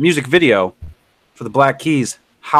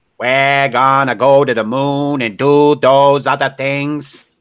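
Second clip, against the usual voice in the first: bad put-on Boston politician accent. Someone says you have not done Kennedy in a while, so do a terrible JFK impression. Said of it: "That was a terrible Kennedy impression".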